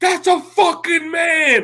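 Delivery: acted shrill scream, very high and stretched out. Retelling shouting across a packed restaurant: retelling a scream. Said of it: "I'm screaming".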